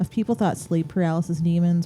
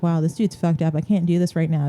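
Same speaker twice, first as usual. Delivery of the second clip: ordinary talk, nothing marked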